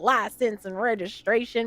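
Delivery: put-on New York Puerto Rican accent. Retelling a friend's traffic stop story, imitating Zsa Zsa's New York Puerto Rican accent. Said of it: "you gotta say it like Zsa Zsa".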